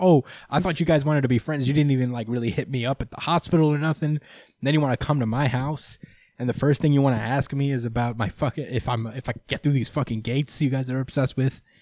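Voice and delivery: ordinary talk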